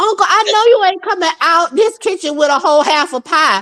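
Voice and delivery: indignant, high-pitched, angry tirade. Retelling how a cousin went off at an uncle in the kitchen, retelling an angry outburst. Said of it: "My cousin went off like".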